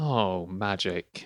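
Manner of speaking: saddened, sighing tone.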